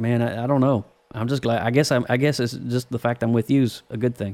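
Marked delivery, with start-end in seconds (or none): none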